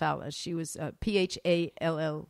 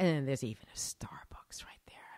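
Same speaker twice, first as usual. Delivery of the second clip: whispered aside, lower and quieter; 4 semitones lower, 7 dB quieter than usual. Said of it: "You whispered it".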